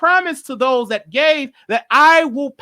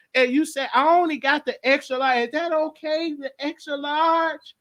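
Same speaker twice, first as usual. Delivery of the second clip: put-on soft, elderly church lady character voice; 5 dB quieter than usual. Playing a subscriber of the dad channel, the speaker does an old church lady voice. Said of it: "let me do an old church lady thing".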